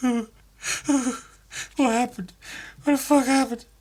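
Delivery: very high, tearful, blubbering crying voice. Retelling a story scene, voicing the shark: imitating a crying shark. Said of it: "the shark's just crying like".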